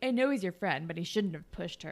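ordinary delivery

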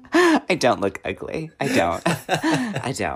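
laughing through words. Praising a performance, imitating Rose Byrne laughing through lines. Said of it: "The way Rose Byrne laughs and goes".

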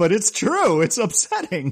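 talking through laughter. Agreeing that a film scene is upsetting, laughing while talking. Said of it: "Sorry, I'm laughing".

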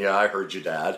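put-on acting like a child. Retelling his own reply at the breakfast table: imitating a childish reply. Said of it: "I acted like a child saying".

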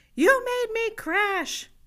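acted-out, very high, shrill little-girl yell. Retelling a crash scene, imitating a little girl yelling. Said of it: "this little girl yelling at me".

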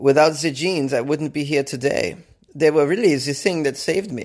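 clumsy, bad, fake German accent. Reading a news story, the speaker quotes a rescued man, in a bad German accent. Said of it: "This is a bad German accent".

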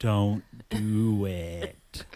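very slow delivery, each word drawn out. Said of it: "she says very slowly".

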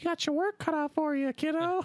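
very high, playful put-on character voice. Swapping two game characters' voices for a joke: Chirithy voice. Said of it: "swapping their voices".

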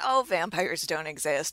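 plain

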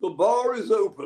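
slow, drawn-out, high fake posh accent. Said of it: "With his fake posh accent".

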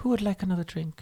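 small, soft-spoken, quiet little voice. Describing a woman chiming into the chat to offer drinks, imitating her little quiet voice. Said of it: "her little quiet voice comes in and goes".

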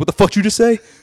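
put-on very loud, very high aggressive outburst. Retelling a reaction to a friend coughing at breakfast: imitating own aggressive reaction. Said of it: "I got so aggressive".

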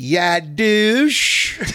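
slow Southern drawl, "douche" drawn out. Retelling a woman's remark to the group on a bus, in a southern drawl. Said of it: "with the Southern drawl".

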